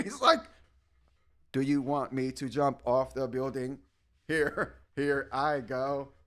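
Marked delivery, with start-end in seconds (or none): 1.5-6.0 flat, low, stiff robotic monotone. Mocking an actor's awkward action roles with a mock robotic delivery. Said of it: "he's so like robotic".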